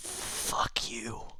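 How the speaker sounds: faint, breathy, very soft last-gasp whisper. Narrating a game scene, the speaker voices a dying creature's last words, whispering. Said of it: "and then it whispers in common".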